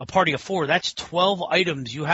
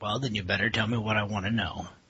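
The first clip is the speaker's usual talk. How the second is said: put-on threatening action hero voice, lower and quieter; 8 semitones lower, 6 dB quieter than usual. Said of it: "You get all John McClane on us".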